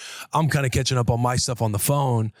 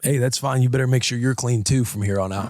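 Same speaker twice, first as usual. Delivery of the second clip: put-on snippy, passive-aggressive tone. Retelling a snappy answer to a partner: imitating own passive-aggressive attitude. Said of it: "I kinda come out with an attitude".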